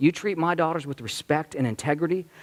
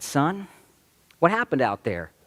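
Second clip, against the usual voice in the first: gentle, kind, patient parent voice. Kneeling to question a little boy, the speaker recalls it, retelling in nice parent voice. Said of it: "kind of like my parent voice, being nice".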